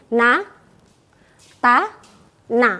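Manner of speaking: syllables na, ta, na, short, separated by pauses. Helping learners remember the letters nun, ta, nun: na, ta, na with pauses. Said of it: "mengingatnya boleh di stop".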